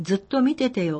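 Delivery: ordinary delivery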